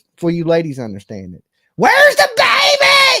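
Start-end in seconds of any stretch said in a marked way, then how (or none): 1.8-3.3 very high, shrill scream, stretched out. Calling out a red flag for the ladies: screaming. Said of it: "I'm standing there screaming that".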